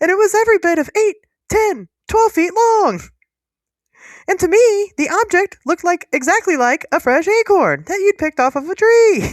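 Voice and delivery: high squeaky cartoon voice. Retelling a man's account of finding a huge metal object, in a Mickey Mouse-like voice. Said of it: "it kind of sounds like Mickey Mouse".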